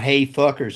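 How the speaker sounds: ordinary talk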